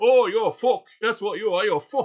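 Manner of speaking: very loud, high-pitched put-on northern English accent. Mocking a commenter's reply, laughing: northern English accent. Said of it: "trying to sound like he's from up north".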